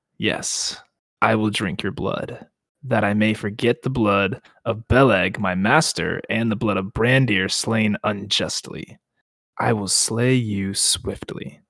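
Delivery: chilling voice. Narrator reading the blade's answer in a story, in a cold voice. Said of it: "ring a cold voice in answer".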